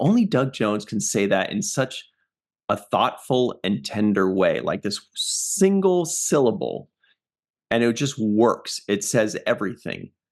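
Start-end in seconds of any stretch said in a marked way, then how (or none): none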